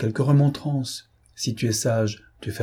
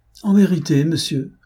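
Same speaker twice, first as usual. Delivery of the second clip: sardonic, raised, pitched-up ironic outcry; 7 semitones higher, 5 dB louder than usual. A rector answers a man who claims not to know what he means, ironic exclamation. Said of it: "s'écria Percepied d'un ton ironique".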